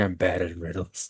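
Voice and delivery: put-on whisper. Joking about a character's answer to riddles: whispering as Zargik.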